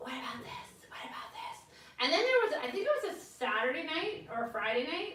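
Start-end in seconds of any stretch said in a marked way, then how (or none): 0.0-1.6 soft, voiceless whisper under the breath. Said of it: "like, whispering".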